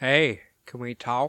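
silky smooth, easy tone. Narrator retelling a driver calling out to a man on a bike, smooth voice. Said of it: "asking in a smooth voice".

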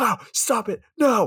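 very high, very slow, drawn-out shriek. Retelling a scene of two people begging someone to stop: imitating someone screaming. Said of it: "like, screaming".

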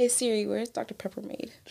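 breathy, very quiet half-whisper, barely audible. Asking a phone assistant a question while another speaker listens: half-whispering. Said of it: "Don't try to whisper it like".

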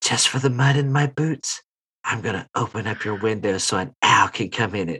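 soft, close-in half-whisper. Narrating a role-play scene, Ruby half-whispering into the player character's ear. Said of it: "you just hear Ruby whisper in your ear".

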